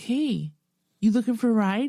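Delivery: imitated, creepy come-on tone. Retelling how a driver offered a ride after mistaken waving: imitating a stranger's come-on. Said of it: "He's like".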